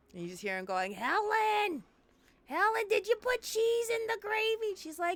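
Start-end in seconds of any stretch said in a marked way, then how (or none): 0.9-4.7 put-on very high-pitched, slow, drawn-out New York accent. Telling a story, the speaker voices a grandpa calling to his wife, new york accent. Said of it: "I don't know why they have New York accents".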